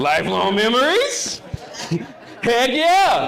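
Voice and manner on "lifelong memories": question-like rising end on "memories". Speaker demonstrates raising a statement at the end so it sounds like a question. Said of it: "I'm raising it up at the end so it comes across as a question".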